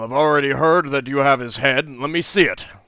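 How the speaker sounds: very loud, resonant, booming ruler's voice. Voicing the Jarl who asks to see the head: booming voice. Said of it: "in a booming voice says".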